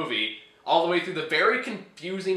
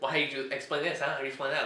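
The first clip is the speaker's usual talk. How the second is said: play-acted haughty, demanding, snooty, needling tone; 2 semitones lower, 7 dB quieter than usual. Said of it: "really kind of snobby".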